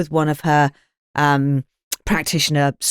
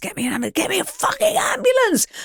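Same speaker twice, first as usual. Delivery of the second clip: put-on frantic, desperate scream, swooping and climbing in pitch. Recalling collapsing to the floor and screaming at everybody, retelling a scream. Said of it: "And I'm screaming at everybody".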